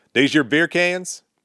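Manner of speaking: hostile, rude cop voice. Retelling what the leader cop asked, imitating a rude, aggressive cop. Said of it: "very rude and very aggressive".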